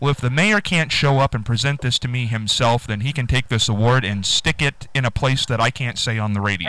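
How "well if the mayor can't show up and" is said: ordinary delivery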